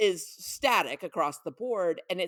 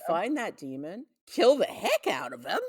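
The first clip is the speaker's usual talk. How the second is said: goofy, cheery, swooping, uncle-like voice. Quoting a character's line: imitating a goofy avuncular voice. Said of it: "in his, like, goofy, avuncular voice".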